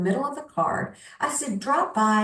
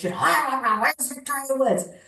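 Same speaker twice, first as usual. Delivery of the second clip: play-acted yelling coach voice, high and demanding; 5 semitones higher than usual. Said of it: "Like a Barry Switzer football coach".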